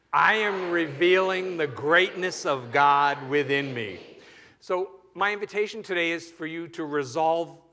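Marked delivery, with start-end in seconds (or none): 0.1-3.9 totally convinced, full conviction, louder. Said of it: "who is so convinced".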